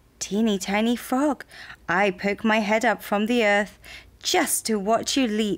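ordinary delivery

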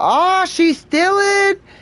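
very high, yelled, hollering voice. Retelling a phone call, imitating yelling out. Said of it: "we started yelling out".

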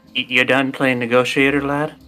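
hushed, half-whispered aside. Half-whispering in character to a companion while guards surround them: half-whispering. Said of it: "And I'll whisper to Sol".

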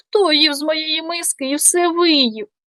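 tiny, thin, high-pitched squeaking little voice. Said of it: "запищав тоненьким голосом".

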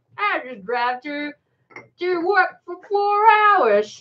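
put-on American accent. Quoting what people say, in a put-on American-sounding accent. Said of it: "Was it an American accent?".

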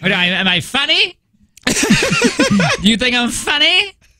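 very high mobster voice with wild, swooping pitch. Showing off your impression while talking about an old movie, Joe Pesci impression. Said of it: "That's my Joe Pesci impression".

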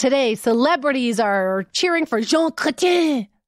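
put-on aggressive, forceful French accent.

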